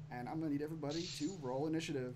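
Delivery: plain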